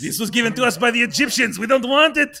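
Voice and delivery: fake French accent, shrill and loud. Acting out the french giving away the statue: bad french accent. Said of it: "That's a bad French accent".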